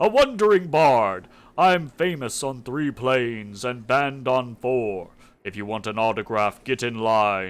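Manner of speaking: big, deep, booming put-on dragon voice. A man ventriloquizes through a glove-puppet dragon, deep booming voice. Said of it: "ventriloquizes in a deep, booming voice".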